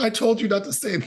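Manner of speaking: exasperated, high-pitched delivery.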